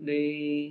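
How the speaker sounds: pleading, imploring tone with "d" drawn long. In a lesson, showing how to make the word D sound imploring: imploring, stretched D. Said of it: "with an imploring tone, with a begging tone, like D".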